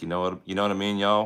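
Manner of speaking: put-on Texan accent, fast, slipping in. Speaker who lived in Texas showing how they slip into a Texas accent. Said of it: "I can go into a Texas real quick".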